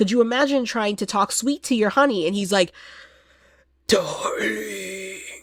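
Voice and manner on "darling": put-on wheezy heavy-breathing voice, quieter. Imitating Count Orlok talking sweet to a partner: heavy-breathing Count Orlok voice. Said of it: "he breathes like that after every word".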